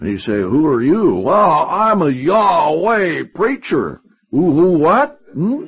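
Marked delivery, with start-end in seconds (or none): 1.2-4.0 heavy, slow Texan drawl, laid on thick. Preacher imagining a man answering at heaven's gates, thick texas accent. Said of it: "with a thick Texas accent".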